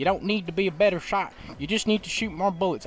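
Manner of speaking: put-on American accent. Quoting a saying from the games, in an American accent. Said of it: "I don't know why I said that in American accents".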